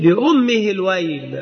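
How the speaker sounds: usual speaking voice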